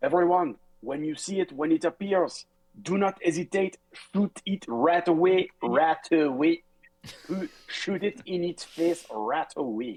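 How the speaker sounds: high-pitched, loud yelling. Voicing a character warning everyone to shoot a dragon: yelling warning to everyone. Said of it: "he yells out to everybody".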